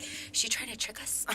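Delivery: whispered to oneself, suspicious tone.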